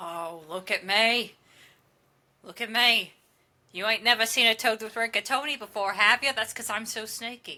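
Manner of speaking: showy, theatrical, swaggering, boastful toad voice. Voicing a toad character in a tabletop game, toad character voice. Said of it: "I am the chef among chefs. I am the one that they call when they need to set things on fire. I am [name], / And the toad, very, very appropriately, like, hunches back to all of their toad glory so tha".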